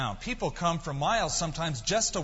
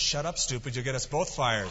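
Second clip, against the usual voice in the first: ordinary talk, nothing marked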